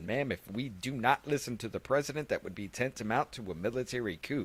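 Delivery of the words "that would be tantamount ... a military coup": ordinary talk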